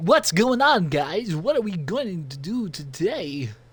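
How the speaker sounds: slow, drawn-out, goofy voice. Showing how annoying it would be if someone talked like that: Christopher Walken impression. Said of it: "I'm not speaking in a really goofy voice".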